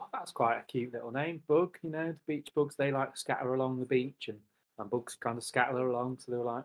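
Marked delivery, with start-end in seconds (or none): none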